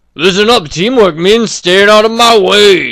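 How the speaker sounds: silly, goofy character voice, high-pitched and loud. Retrying a character's line to make him sound goofier, in a goofier character voice. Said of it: "That makes him sound a little goofier".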